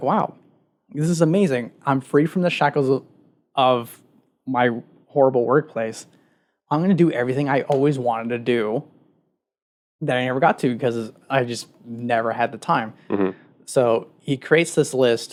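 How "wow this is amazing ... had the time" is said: normal talking voice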